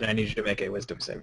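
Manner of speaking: usual speaking voice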